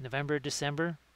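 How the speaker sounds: ordinary delivery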